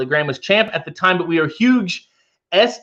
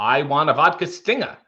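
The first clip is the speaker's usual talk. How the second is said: put-on old Boston accent, lower; 3 semitones lower than usual. Showing off an accent he says he can do: Kennedy Boston accent. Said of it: "I can do like a Kennedy".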